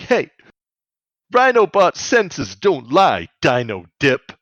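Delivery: loud, high, really pissed-off angry rant. Retelling what he said when he got really pissed off: mock-angry outburst. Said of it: "He gets really pissed off and he's like".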